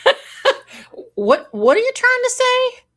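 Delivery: high, loud, baffled "huh".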